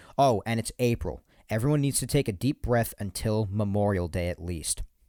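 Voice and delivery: ordinary delivery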